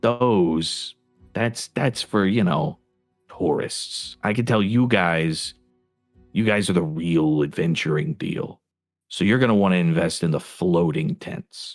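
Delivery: confiding, hushed tone. Voicing a tent seller pitching to adventurers, in a lowered conspiratorial voice. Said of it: "lowers his voice and he says".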